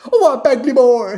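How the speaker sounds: loud, slow, failed attempt at Jamaican accent. Recalling teammates with jamaican accents, attempting a jamaican accent. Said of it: "I can't do a Jamaican accent".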